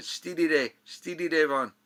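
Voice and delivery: put-on thick, laid-on Scottish accent, loud and high. Retelling what the press agent Charlie said, imitating Charlie's heavy Scottish accent. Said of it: "Charlie has this heavy Scottish accent".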